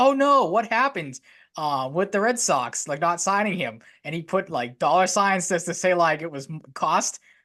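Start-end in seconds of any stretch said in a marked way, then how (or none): 0.0-3.8 sarcastic, worried tone with swooping concern. Speaker recalling a sarcastic question they tweeted, acting out own sarcastic question. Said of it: "being sarcastic".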